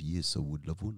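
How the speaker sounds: bad put-on French accent. Retelling Fred's answer when offered a coffee, imitating Fred's French accent. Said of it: "I can't do a French accent".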